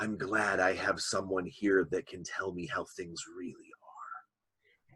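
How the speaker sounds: soft, hushed whisper under the breath. Voicing a sleepy creature who confides in a player: whispering. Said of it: "he whispers to you and says".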